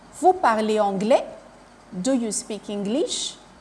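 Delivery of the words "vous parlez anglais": voice climbs at the end on "anglais". French lesson on question intonation, rising at the end on anglais. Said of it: "My voice go up when the sentence is going to end".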